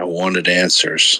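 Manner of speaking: whispered, hushed. Narrating a character turning to a companion amid chaos: whisper. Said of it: "who he just whispers".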